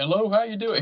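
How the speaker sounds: lazy Texan drawl. A plumber describes first meeting a customer at the door: King of the Hill voice. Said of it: "he talked just like fucking King of the Hill".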